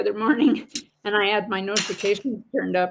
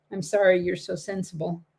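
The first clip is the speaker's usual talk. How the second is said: plain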